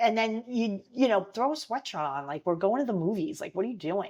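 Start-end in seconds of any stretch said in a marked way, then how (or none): 2.5-4.1 put-on chiding, scolding teenage girl voice. Retelling how teenage girls kept each other in check: imitating teenage girls chiding a friend. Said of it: "we would talk like that to each other".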